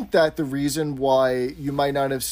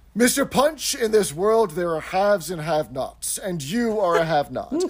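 grand Shakespearean voice, pitched higher; 4 semitones higher than usual. Speaker acts out Mister Humphrey addressing Mister Punch, Mister Humphrey's Shakespearean voice. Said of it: "he becomes this great Shakespearean character".

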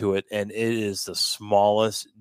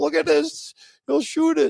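put-on man yelling, higher and louder; 5 dB louder than usual. Retelling how a man leaving the bar yelled at the father: imitating a man yelling. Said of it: "he starts yelling".

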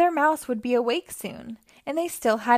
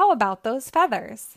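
plain

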